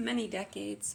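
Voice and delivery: ordinary talk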